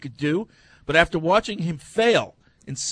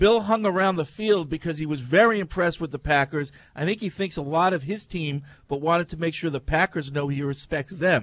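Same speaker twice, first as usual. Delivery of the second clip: plain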